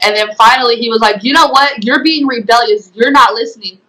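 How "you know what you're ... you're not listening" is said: ordinary delivery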